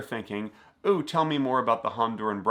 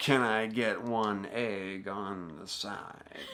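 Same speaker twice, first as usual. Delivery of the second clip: very slow, every word stretched and drawn out; 2 semitones lower, 5 dB quieter than usual. Retelling breakfast ordering, doing a Jack Nicholson impression. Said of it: "And he's like".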